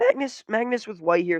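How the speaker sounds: voice cracking up high partway through. Commentating a chess game, the speaker announces the next move, voice cracking. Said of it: "Sorry for the voice crack".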